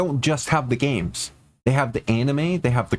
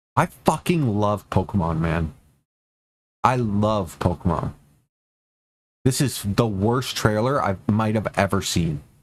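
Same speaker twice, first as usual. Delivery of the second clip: worked-up, riled-up, hard venting in a low voice; 5 semitones lower than usual. Ranting about a pokemon trailer he hates: worked up. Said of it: "I'm so worked up right now".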